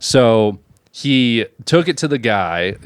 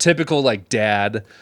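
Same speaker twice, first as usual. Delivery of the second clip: plain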